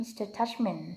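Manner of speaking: ordinary delivery, nothing marked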